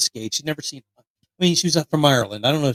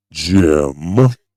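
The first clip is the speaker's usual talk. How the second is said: put-on woman's voice, lower and louder; 10 semitones lower, 8 dB louder than usual. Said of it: "let me do Julie's voice here".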